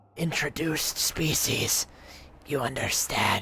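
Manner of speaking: broken-up, halting rasp, words forced out, monster voice. A game narrator voices a talking horror addressing the player: halting, rasping voice. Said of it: "address you in a halting, rasping voice".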